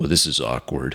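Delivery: rough, gruff voice, dropped low. Narrating a scene where a man holding your phone turns around, in a gruff voice. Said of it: "in a gruff voice".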